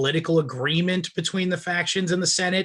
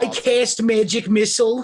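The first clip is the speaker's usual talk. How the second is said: higher-pitched caricature voice; 5 semitones higher, 4 dB louder than usual. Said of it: "I basically just talk like this".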